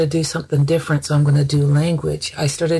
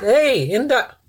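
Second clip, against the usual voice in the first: acted-out loud bellow, much higher; 8 semitones higher than usual. A mother retells calling up to a young person upstairs: retelling a bellow. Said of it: "I bellowed at him".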